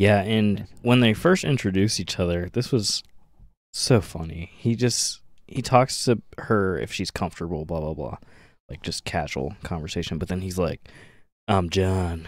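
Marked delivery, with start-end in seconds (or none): 11.5-12.3 put-on seductive voice. Retelling how John introduces himself: imitating John saying it sexually. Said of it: "And he says it so sexually".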